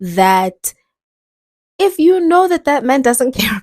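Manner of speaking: laughing through the words. Talking about staying with a man who doesn't care: giggling while talking. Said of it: "I can't even say it without giggling".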